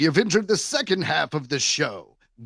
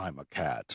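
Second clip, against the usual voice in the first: very low, very soft, fake-deep hushed voice; 13 semitones lower, 12 dB quieter than usual. Imagining someone who just says it plainly as a cat: deep voice. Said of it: "deep voice".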